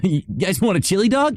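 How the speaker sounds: very high-pitched cartoon voice, pitch pushed way up. Showing off voice range to chat: Sonic the Hedgehog impression. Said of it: "All that Sonic impression".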